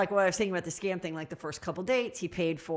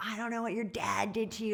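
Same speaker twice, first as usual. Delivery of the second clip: put-on screaming, pitched higher; 3 semitones higher, 5 dB quieter than usual. Retelling being backed into a corner: imitating someone screaming. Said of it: "he starts screaming at me really loud".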